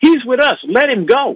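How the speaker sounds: play-acted, shrill, very high holler. Retelling how an agent called to another agent: imitating someone hollering. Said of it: "he hollers at the Secret Service agent".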